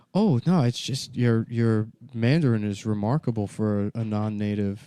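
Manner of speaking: normal talking voice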